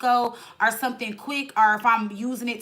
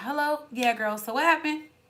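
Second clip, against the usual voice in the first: sudden calm, settled, easy phone voice; 4 semitones higher than usual. Turning back to the phone after going off: imitating her own sudden calm. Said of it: "two seconds later you be calm".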